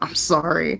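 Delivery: soft whispered speech. Apologizing awkwardly in character to another player's character: whispering. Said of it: "as he whispers".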